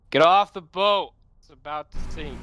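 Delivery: very high, loud, drawn-out long-distance shout. Calling to someone sixty feet away on a boat: yelling from a distance. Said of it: "I'm gonna call out".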